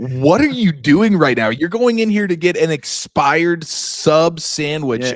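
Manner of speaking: mock exasperated shouting. Reminding the listener how they yelled at someone at the gas station, mock yelling. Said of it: "you're like yelling at him".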